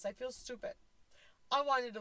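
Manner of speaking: crying while talking. Recounting breaking down at a grandmother's funeral, crying while talking. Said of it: "I'm crying doing this".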